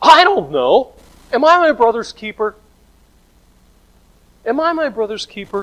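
acted exasperated outburst, very high pitch, very loud. Retelling Cain's answer to God, acting out Cain's frustration. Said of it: "I can hear the frustration in his voice".

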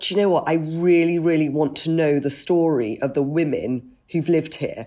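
plain

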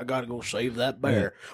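put-on low, drunk-sounding speech. Picturing a drunk Florida man rushing in for a bear: imitating a drunk Florida man. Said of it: "a drunk Florida man to be like".

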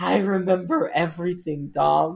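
put-on whisper. Retelling a movie scene where Letty revives Dom: imitating Letty whispering. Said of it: "she can just whisper in his ear".

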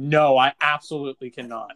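mock gravest possible, stern, dead-serious tone. Speaker retells asking Bodwin for math help, imitating Bodwin's very serious voice. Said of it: "in the most serious voice you ever used".

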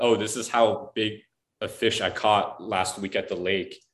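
ordinary talk

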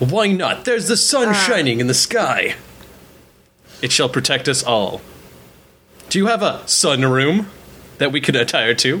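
sunny, cheery, grandiloquent nobleman voice. A game master voices the sun-praising noble answering his host: ever-smiling noble voice. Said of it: "[name] is a noble from a house that praises the sun. He is a man of action and a man of smiles at all times. / [name] is a noble from a house that praises the sun. He is a man of action and a man of s".

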